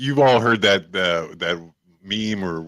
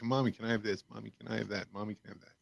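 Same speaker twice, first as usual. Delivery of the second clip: put-on kid voice impression, much quieter; 2 semitones higher, 16 dB quieter than usual. Describing kids at the register wanting impulse buys, imitating a little kid. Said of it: "He's like".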